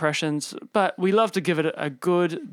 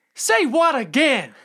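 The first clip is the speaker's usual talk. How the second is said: very high, loud, deliberately rough put-on voice; 10 semitones higher, 5 dB louder than usual. Doing a self-declared shite impression for the other speaker to guess: Samuel L. Jackson impression. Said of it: "Samuel L. Jackson-esque".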